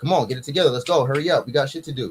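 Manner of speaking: put-on militant, bossy drill-style voice. Retelling past orders to other men about sweeping: imitating his own militant bossing. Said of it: "I'm militant".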